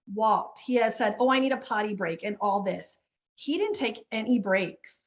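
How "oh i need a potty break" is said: ordinary talk, nothing marked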